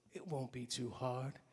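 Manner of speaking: put-on British accent. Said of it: "they have English accents".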